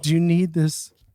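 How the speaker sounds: imitated sugary-sweet voice. Retelling someone knocking on an occupied door, imitating a sweet voice. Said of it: "The sweet, sweet voice of somebody saying".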